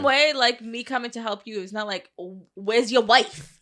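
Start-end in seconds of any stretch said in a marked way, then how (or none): 2.6-3.4 put-on Staten Island accent. Give an example of what you would not say when coming to help, in a Staten Island accent. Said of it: "That was more like Staten Island".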